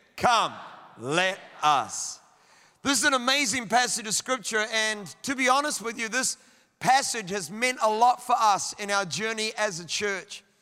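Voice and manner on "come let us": very low, deep, earnest, emphatic voice. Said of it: "Say it like you mean it".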